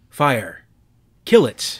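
composed, loud, commanding tone. Glass orders the others to fire at the bug, commanding. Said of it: "Glass commanded".

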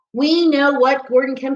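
ordinary delivery

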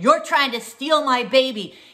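angry, really loud, high yell. Speaker retelling confronting a woman in a store: retelling a really loud yell. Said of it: "really, really loud".

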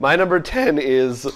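voice cracking and breaking. A podcast host announcing the number ten pick, voice cracking. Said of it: "My voice just cracked".

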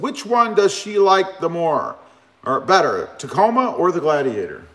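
ordinary talk

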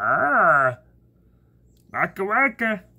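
argh stretched out, high and loud. Showing the voice that annoys his dad, do a Fozzie Bear voice. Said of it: "Fozzie Bear voice".

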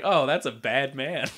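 plain

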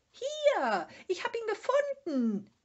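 very high, loud shrill cry, drawn-out "Hier". After sniffing around for the way, it finally calls out to Moomin: screaming. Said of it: "bis es schließlich schrie".

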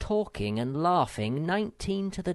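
plain

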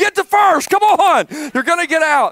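loud, high-pitched yelling. Father retelling what he yelled to his injured son: retelling own yell. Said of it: "I yell".

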